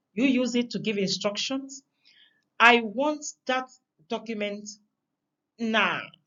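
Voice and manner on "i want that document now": hangs back, then hits "now" with stress. Giving an instruction to show emphasis: pause, then stressed now. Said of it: "There's a pause and, and you go for now".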